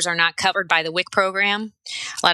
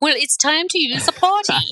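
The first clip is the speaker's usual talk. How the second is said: put-on very high, crazy, over-the-top English accent; 9 semitones higher than usual. Asked for a snippet of the voice she used at the door: crazy English accent. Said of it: "some crazy English accent came".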